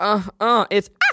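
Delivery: very high chipmunk moans.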